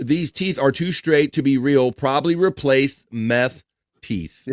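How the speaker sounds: usual speaking voice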